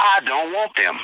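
put-on blunt, pointed tone, projected to be overheard. Recounting what a man said, looking over at them before a match: retelling a loud remark. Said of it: "very loudly, he says".

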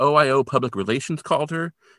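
ordinary talk, nothing marked

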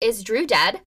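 mock freaked-out, frantic, panicking voice. Recounting Jasmine's urgent, secretive errand, retelling own panic. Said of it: "I'm freaking out".

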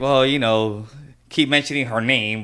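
usual speaking voice

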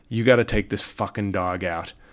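plain

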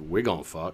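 mock mumble under breath. Retelling a movie scene where a character speaks: imitating someone muttering under his breath. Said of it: "under his breath says".

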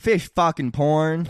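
thick put-on Canadian accent. Asked to say a silly phrase in an accent, repeating it; Canadian accent. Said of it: "You hit Canadian there".

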